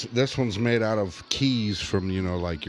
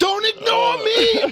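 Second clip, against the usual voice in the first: put-on very high, loud, drunk Irish-accented holler; 8 dB louder than usual. Voicing a hemorrhoid named Mickey, a red-faced Irish guy: drunk Irish Mickey voice. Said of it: "Totally annihilated and demanding attention".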